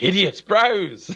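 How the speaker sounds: high, anxious, worried little growl. Retelling his wife's niece's first reaction on meeting him: imitating a worried growl. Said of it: "has this, like, s-, worried growl".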